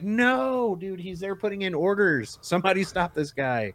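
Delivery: put-on very high shouting. Recalling watching the news, retelling yelling at the TV. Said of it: "I'm yelling at the TV like".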